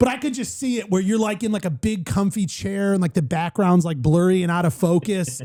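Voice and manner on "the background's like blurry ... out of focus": ordinary talk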